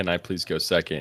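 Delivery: timid, meek, soft and slow voice. Retelling how another player asked to go second: imitating a meek request. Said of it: "she very meekly said".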